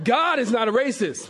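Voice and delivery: emphatic laughing delivery.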